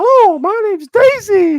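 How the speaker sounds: shrill, booming, very high, loud fake woman's voice. Mocking a guy who puts a voice on to introduce himself: put-on woman's voice. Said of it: "it's gonna put some fucking woman's voice on".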